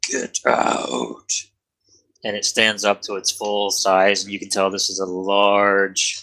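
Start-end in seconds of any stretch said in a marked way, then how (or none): 0.0-1.3 rough, creaky growling voice of a huge dragon. The narrator voices a large dragon that has just woken up: growling dragon voice. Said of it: "it just growls and goes".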